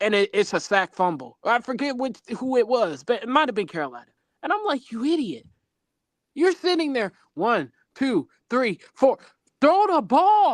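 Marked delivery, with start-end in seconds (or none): 4.9-10.5 exasperated, screaming rant. Retelling yelling at a quarterback holding the ball: retelling screaming at the tv. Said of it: "I be screaming at the T V".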